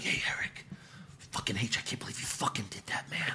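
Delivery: put-on angry whisper. Imitating an angry promo to show how it sounded: imitating Rey Mysterio angrily whispering. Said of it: "Ray's pissed and he's whispering".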